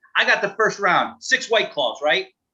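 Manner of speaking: eager, thrilled tone. Retelling a young guy ordering the first round at a bar, imitating his excitement. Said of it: "he's so excited".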